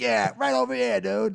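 put-on Boston accent. Chatting about Southie, the speaker imitates the local Boston accent. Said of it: "That's a good accent too".

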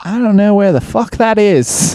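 put-on thick Australian accent. Retelling what a man said on hearing where they were from, heavy Australian accent. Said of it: "had this like a very heavy Australian accent".

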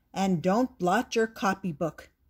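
ordinary delivery, nothing marked

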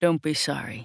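full, rich, deep masculine voice. Reading a romance story aloud, voicing the man: rich deep voice. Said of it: "he says in his rich, deep voice".

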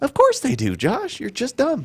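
high, sassy teasing voice. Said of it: "They'd say it just like that".

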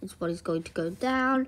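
plain reading voice

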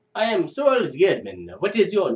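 put-on Russian accent. Bringing a Russian stereotype to life, speaker introduces himself as Soal in a Russian accent. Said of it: "How do you do a Russian accent?".

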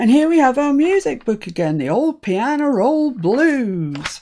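put-on American accent.

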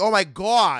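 put-on, very thick New York accent, high, loud. Showing how her very thick accent sounds: thick New York accent. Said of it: "it's so thick it sounds put on".

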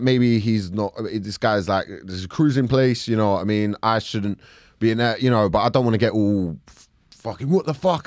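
ordinary talk

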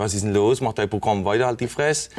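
ordinary delivery

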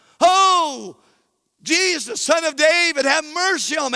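put-on desperate pleading, high cry, drawn-out "oh". Retelling a Gospel scene as a man begins to cry out, retelling a desperate cry. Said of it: "he begins to cry out".

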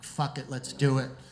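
ordinary talk, nothing marked

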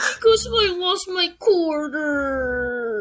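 slow sobbing cry, "quarter" stretched out. Playing a toy character who lost a quarter, acted crying. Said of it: "Why are you crying?".

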